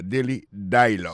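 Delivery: dialogue with heavy stress on first syllable di-. Teaching English pronunciation of a title, stress on first syllable of dialogue. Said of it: "il pèse plus sur le premier syllabe là".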